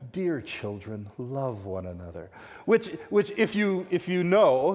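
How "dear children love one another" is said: put-on warm voice, lower and quieter. Speaker retells someone imitating John, in a put-on warm voice as John. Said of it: "puts on this warm voice".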